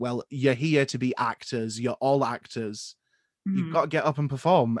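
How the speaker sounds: ordinary talk, nothing marked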